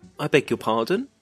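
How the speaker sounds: polite, rising tone on pardon. Showing what you say when you don't understand people, with rising intonation. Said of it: "You notice my voice is going up".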